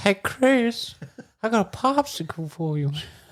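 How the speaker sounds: very high, creepy voice. Introduced as a close friend, the guest does a Herbert impression. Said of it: "can do a mean Herbert the Pervert impression".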